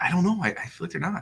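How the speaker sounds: nervous, hesitant voice. Answering whether the team will sign the player: nervous voice. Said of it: "this is your nervous voice".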